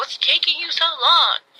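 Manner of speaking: put-on yelling. Retelling a baby sister calling from behind the camera: imitating someone yelling. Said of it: "yelling at me".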